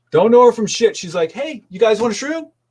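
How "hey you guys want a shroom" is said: play-acted, extremely friendly, casual tone. Retelling how a stranger hopped in the car and offered shrooms: imitating a very friendly offer. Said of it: "As friendly as friendly could be".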